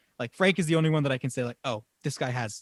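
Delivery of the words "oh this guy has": ordinary delivery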